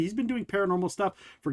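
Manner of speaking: ordinary talk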